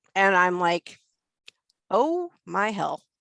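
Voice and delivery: ordinary talk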